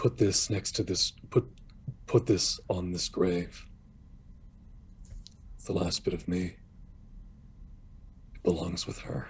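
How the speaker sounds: hushed, barely voiced, very quiet whisper. Telling the story, a character leans in to Iticus: very quiet whisper. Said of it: "he'll whisper to Iticus just very quietly".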